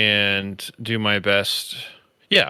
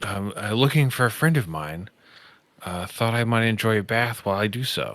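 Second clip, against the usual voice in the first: fast, hurried, hushed half-whisper; 3 dB quieter than usual. Answering a nervous creature in a bathhouse, half-whispering back. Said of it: "I whisper back".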